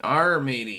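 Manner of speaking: playful, put-on pirate voice. Signing off the news show, promising to be pirates tomorrow: pirate voice. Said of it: "We'll be pirates and shit".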